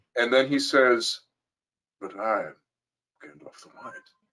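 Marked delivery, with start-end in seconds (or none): 2.0-4.0 very quiet, hushed, secretive voice. Retelling a film moment in Gandalf's voice, like a dirty little secret. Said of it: "he says it like it's a dirty little secret".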